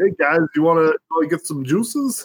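put-on old-school New York accent. Mocking an actor in a western who never changes his voice, old New York accent. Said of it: "The old New York accent".

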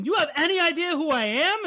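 high-pitched yelling. Retelling a story scene where a character yells at her captor, retelling a yell. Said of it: "Wanda yells at him".

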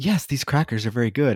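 imitated matter-of-fact, deadpan, creepy mannequin voice. Describing a favorite scene, imitating the mannequin's matter-of-fact creepy voice. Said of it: "so like matter of fact and so like creepy".

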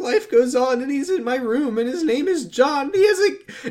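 very high, weepy, sobbing crying voice. Retelling what a new mother said: imitating [name]'s crying voice. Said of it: "[name] does crying voice".

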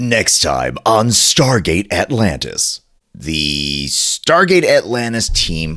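trailer-style tv promo announcer voice. Trying to come up with a different promo voice, the speaker does a promo voice. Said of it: "I gotta have a promo voice".

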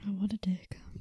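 soft whispered aside.

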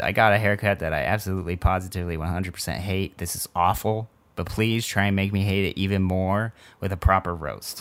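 ordinary talk

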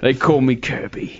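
put-on tough-guy voice with Cockney accent. Voicing a tough version of a game character: Cockney street punk Kirby voice. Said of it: "Kirby is like a Cockney tough British street punk".

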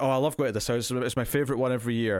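ordinary talk

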